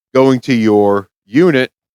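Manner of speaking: ordinary talk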